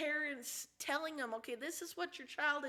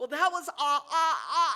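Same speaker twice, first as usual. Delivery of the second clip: put-on stutter, louder; 9 dB louder than usual. Retelling what a stuttering boy said: imitating a boy's stutter.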